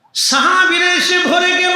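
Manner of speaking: fervent, high-pitched preacher shout.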